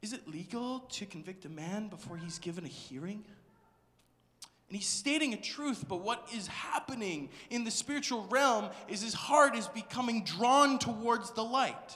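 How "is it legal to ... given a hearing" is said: very timid, meek, soft voice. Imagining a man asking about his fair hearing, acting out a meek question. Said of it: "imagine very meekly".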